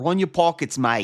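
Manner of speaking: put-on Australian accent, high. Imagining a mugger in the wrong london neighborhood, australian accent. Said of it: "We both just did Australian".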